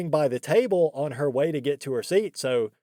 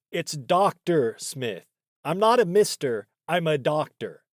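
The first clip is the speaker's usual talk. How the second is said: put-on annoyed, pissed-off tone. Retelling a teacher's correction of a student's title: imitating someone sounding pissed off. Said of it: "he just sounded so pissed off".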